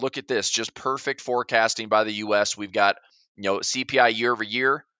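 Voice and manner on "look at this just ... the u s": ordinary talk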